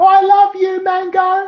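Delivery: put-on shrill, very high, loud yell. On stage, retelling someone in the crowd yelling out to him, retelling a crowd yell. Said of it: "someone in the crowd just yelled out".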